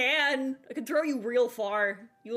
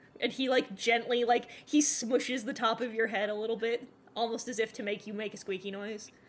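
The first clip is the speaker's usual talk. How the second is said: plain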